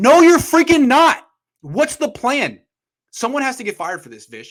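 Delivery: heated, worked-up, loud, swooping rant pitched way up. Complaining that the team is not developing young players: worked up. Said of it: "I got worked up again".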